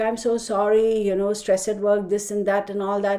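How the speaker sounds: ordinary talk, nothing marked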